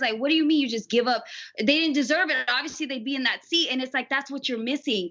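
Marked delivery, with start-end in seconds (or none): none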